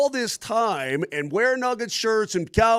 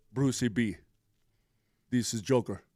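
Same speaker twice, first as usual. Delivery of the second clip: put-on Serbian accent, lower and quieter; 8 semitones lower, 7 dB quieter than usual. Taking a turn at a Jokic impression on a call: Nikola Jokic impression. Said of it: "you do your Jokic".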